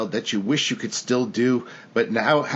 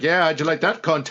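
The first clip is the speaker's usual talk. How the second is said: put-on Irish accent laid over the voice; 4 semitones higher than usual. Imagining a Harry Potter movie at the ride's end: Irish Harry Potter voice. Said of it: "Irish Harry Potter".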